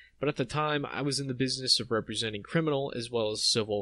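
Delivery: ordinary delivery, nothing marked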